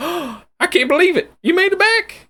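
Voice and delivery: put-on loud, very high old man voice. Voicing an old man greeting returning players: Old Man Jenkins voice. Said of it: "and he's just like".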